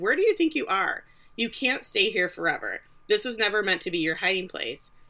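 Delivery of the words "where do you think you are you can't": plain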